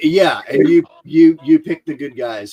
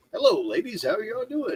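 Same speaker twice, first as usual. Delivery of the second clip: very high, sing-song, put-on cheerful tone; 9 semitones higher, 8 dB quieter than usual. Explaining how they used to fake being happy, the speaker acts out a fake-happy greeting. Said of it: "I'm not that happy".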